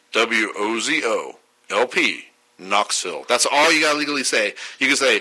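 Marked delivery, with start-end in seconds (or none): 0.1-3.2 robot voice, spelling out letter by letter. A radio host says the legally required station ID in a robot voice. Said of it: "This is my best robot impression".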